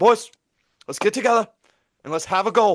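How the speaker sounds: put-on British football commentator accent, rousing announcer delivery. Retelling a commentator's fake pep talk: imitating a British commentator. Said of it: "There's this British commentator".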